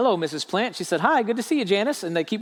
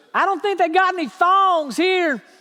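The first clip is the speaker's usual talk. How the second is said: put-on piercing, very high, nasal old-lady whine; 10 semitones higher, 4 dB louder than usual. Retelling what grandma said to him at j c penney, in a shrill, nasally grandma voice. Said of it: "in this shrill, nasally voice that my grandma would sometimes use".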